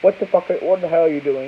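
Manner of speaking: ordinary talk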